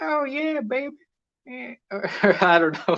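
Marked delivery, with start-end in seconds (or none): 0.0-1.7 put-on Southern accent, pitched very high. Acting out a fifties woman answering a man who asks her out, Southern accent. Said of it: "I don't know why she has a southern accent".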